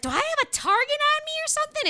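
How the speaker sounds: very high-pitched, little, whiny woman's voice. Acting out a woman blaming other people for her wreck, imitating a little whiny woman voice. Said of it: "In that little whiny woman voice".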